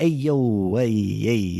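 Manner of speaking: put-on slow, drawn-out, slight Brooklyn accent. Imitating an actor in a trailer trying a Brooklyn voice: Chris Pratt doing a Brooklyn voice. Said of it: "Chris Pratt's voice is just like Chris Pratt, but trying to do kind of a".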